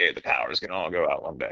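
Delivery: paranoid, dead-certain, doom-laden tone. Retelling own past warning about the power: imitating own paranoid warning. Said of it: "like a paranoid schizophrenic".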